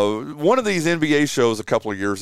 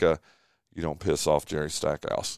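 put-on sheepish tone, lower and quieter; 7 semitones lower, 7 dB quieter than usual. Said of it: "he said it real sheepishly too".

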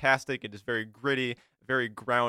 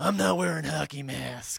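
gravelly, creaky, ground-out masked hero voice; 4 semitones higher than usual. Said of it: "it's very grovelly".

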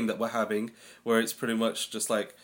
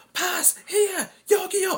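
put-on shouting, higher and louder; 4 dB louder than usual. Retelling calling to teammates on the pitch for the ball: retelling a shout. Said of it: "So you're shouting".

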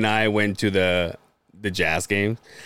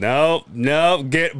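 put-on thick voice, much slower; 3 semitones higher than usual. Retelling what a man said during a clinch, imitating a thick voice. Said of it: "But his voice is so thick".

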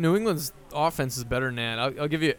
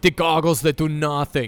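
loud, put-on German accent; 6 dB louder than usual. Doing an impression that sounds like McBain: Bastian Schweinsteiger impression. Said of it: "That's my impression of Bastian Schweinsteiger. He just sounds like McBain".

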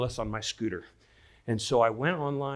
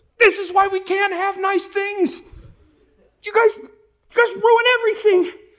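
very loud, very high, shrill screaming tantrum; 10 dB louder than usual. Retelling how you lost it at your helmet, acting out your temper tantrum. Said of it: "throw a temper tantrum".

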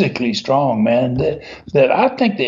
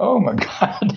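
mock frightened, fearful commentator outcry; 7 semitones higher than usual. Retelling how the commentators reacted to huge wrestlers: imitating scared commentators. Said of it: "You hear the fear in Fields and Latham's voice".

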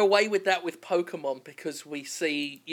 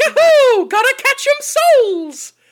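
very high, loud, squeaky cartoon voice; 13 dB louder than usual. Joking about a soul-catching Mario, in a Mario voice. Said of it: "That was more Mickey Mouse than Mario".

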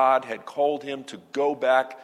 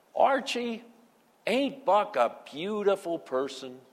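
whining voice, high and pitched up; 7 semitones higher than usual. Recounting a TV scene where Edith talks to Archie alone: whiny Edith voice. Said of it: "Edith says in her whiny voice".

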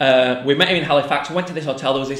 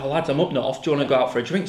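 ordinary talk

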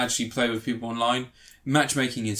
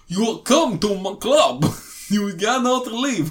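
loud, very high-pitched put-on Russian accent; 9 semitones higher, 5 dB louder than usual. Quoting a character from a poker movie, russian accent. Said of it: "He does like he does a Russian accent".

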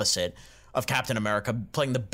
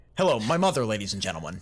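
imitated smug, grinning delivery. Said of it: "deliver with a shit-eating grin".

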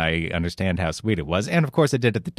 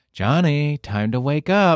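kindly, tender, gentle, high-pitched voice; 7 semitones higher, 3 dB louder than usual. Recalling the wake-up call johnny used to hate hearing: imitating a quiet, kind voice. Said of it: "as quietly and kindly as you could".

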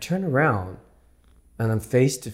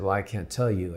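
ordinary talk, nothing marked

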